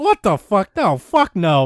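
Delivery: acted angry outburst, words dragged out and swooping. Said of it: "I was so mad".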